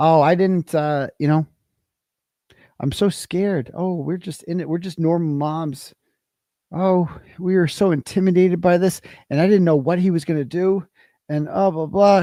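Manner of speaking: sarcastic, mocking, fake-scared voice. Retelling what she says on the stand: mocking imitation of her fake fear. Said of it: "she gets up there and she just says straight up".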